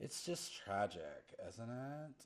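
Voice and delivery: very millennial-sounding, soft voice. Describing a voice the listeners hear while following them into the mist; millennial voice. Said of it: "you hear this very millennial voice".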